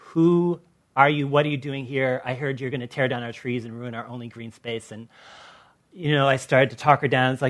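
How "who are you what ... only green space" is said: ordinary delivery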